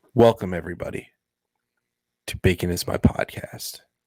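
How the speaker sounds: subdued low-key delivery. Speaker redoing the podcast intro a second time: toned down. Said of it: "I'm going to tone it down a bit".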